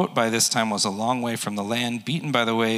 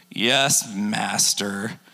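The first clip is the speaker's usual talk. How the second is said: put-on cynical, sarcastic tone. Acting out a reply from the Bible passage, imitating a sarcastic, cynical reply. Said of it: "I hear some sarcasm and cynicism in this".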